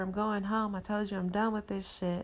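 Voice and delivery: ordinary delivery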